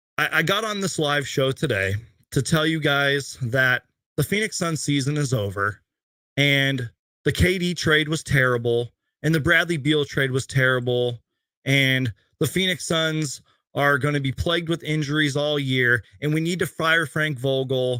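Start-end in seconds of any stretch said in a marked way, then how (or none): none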